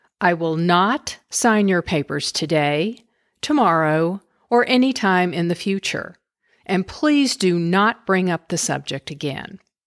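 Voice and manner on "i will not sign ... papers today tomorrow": ordinary delivery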